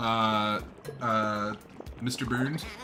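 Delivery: ordinary talk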